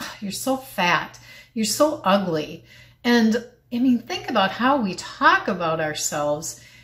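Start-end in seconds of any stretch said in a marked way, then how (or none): 0.0-2.6 mock-disgusted voice, acted disgust, slower pace. Speaker retells looking at herself in the mirror, imitating her own disgusted voice. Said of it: "I would just look at myself with disgust".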